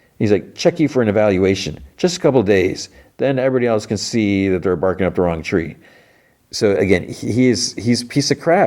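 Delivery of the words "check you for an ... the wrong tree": ordinary talk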